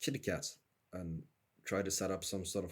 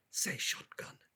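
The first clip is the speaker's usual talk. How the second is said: hushed, whispered voice. Whispering a hint into another character's ear: whispering. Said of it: "whisper into her ear".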